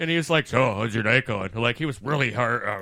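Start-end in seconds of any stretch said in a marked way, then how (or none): 0.5-1.5 put-on low, gravelly voice. Retelling what a drag queen said behind him: imitating a gravelly voice. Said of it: "he had the real gravel voice".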